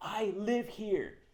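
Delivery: shrill, high, loud yell. Retelling yelling back at an angry neighbor: retelling own yell. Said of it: "I yell back at him".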